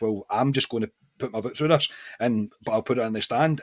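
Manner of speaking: usual speaking voice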